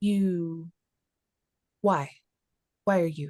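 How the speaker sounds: filtered, modulated, processed-sounding voice. A storyteller voices a strange figure questioning someone who dropped their bow, modulated voice. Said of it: "the same like modulated kind of voice".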